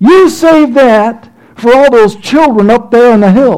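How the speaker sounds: booming, declaiming, high and loud. Retelling a man's response to him, imitating a booming voice. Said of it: "he booms out in his voice".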